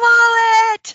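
very high, very loud, shrill, booming, drawn-out yell. Playing a character hit in a fight, yelling to a teammate: yelling in character. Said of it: "I yell".

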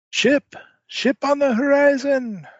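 very high, loud cry ringing out. Narrating a pirate adventure game, voicing the lookout: lookout crying out. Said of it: "you hear a cry ring out".

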